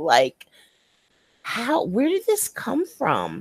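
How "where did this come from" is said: put-on baffled voice, much higher, quieter. Recalling the listener telling this story, imitating the listener's baffled tone. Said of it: "sounded like really, really baffled".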